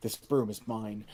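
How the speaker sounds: whispering. Whispering to her in character before teleporting away: whispering in character. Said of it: "I'm gonna whisper to her".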